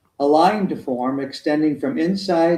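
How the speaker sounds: plain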